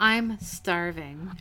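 mock seductive delivery. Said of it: "she says it in a very erotic way".

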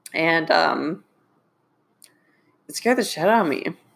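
teary voice, on the verge of crying. Recalling health scares on a podcast, teary-eyed. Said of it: "I am getting teary-eyed right now".

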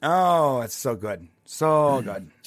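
very slow, drawn-out, heavily ironic sarcasm. Talking about a 7-Eleven phone trick, sarcastic. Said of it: "I'm saying that sarcastically".

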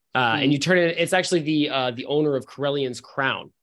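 ordinary delivery

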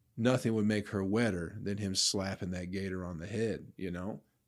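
normal talking voice

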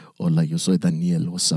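low-pitched radio DJ voice.

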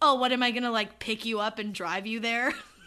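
put-on rude tone. Retelling how a nervous boy offered to take her to prom, she replays her reply, acting out being rude. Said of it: "But I was so rude".

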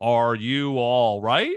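robot-like voice, slow and drawn out. Imitating Joel asking Ellie if she's all right: robotic Joel voice. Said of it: "He says it like, like a robot".

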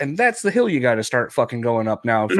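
ordinary delivery

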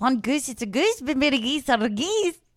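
Scottish accent, put on. Asked for something to say, the speaker repeats a phrase in a Scottish accent. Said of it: "Tell me something to say and I'll say it in Scottish".

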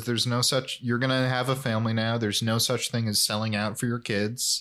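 ordinary delivery

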